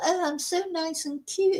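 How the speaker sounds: put-on small, soft, high, little girly voice. Telling why you could not bear someone like Laura in your life, do Laura's little girly voice. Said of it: "I'm just using this little girly voice".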